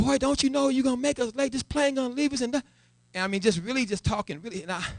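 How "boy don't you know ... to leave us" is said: loud, high-pitched scolding scream. Retelling how a father screamed and scolded in an airport: imitating father screaming. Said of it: "he's screaming at me".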